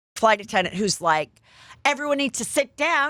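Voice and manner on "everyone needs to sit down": acted snippy, pissy, irritated tone. Retelling a pissy flight attendant's order: imitating a pissy flight attendant. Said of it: "there's a pissy".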